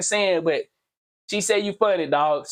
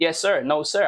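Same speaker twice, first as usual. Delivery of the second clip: put-on polite deferential tone, lower; 4 semitones lower than usual. Retelling how he talks to preachers: imitating his respectful talk. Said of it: "I talk with respect".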